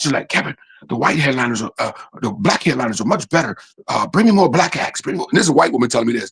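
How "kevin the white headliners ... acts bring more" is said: secretive, fully voiced, confiding stage whisper. Retelling what the venue owner said in her office: imitating someone half-whispering. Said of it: "She's whispering".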